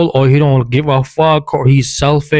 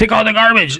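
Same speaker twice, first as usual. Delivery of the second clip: bossy, curt, pitched-up delivery; 8 semitones higher than usual. Showing how not to ask a partner for a chore: curt ordering tone. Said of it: "talk to me in that tone".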